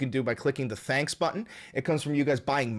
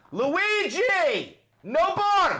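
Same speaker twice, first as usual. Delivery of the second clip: high, cracking yell. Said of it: "my fucking voice cracking".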